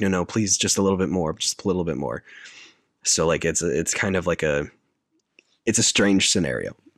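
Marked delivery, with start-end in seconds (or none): none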